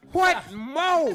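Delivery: shouted, high-pitched yell. Recapping today's letter to the others, yelling. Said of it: "Why are you yelling?".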